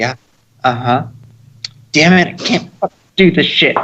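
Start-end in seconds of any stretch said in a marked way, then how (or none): 0.0-1.1 hushed, barely-there, very quiet, soft uh-huh. Retelling what was heard from a game recording: imitating someone talking quietly. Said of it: "and it's real quiet".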